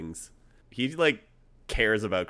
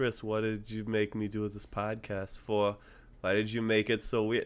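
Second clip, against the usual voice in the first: mock flat monotone, quieter; 2 semitones higher, 4 dB quieter than usual. Imitating someone who always talks with the same flatness, the speaker does a flat monotone impression. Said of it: "talks with the same flatness all the time".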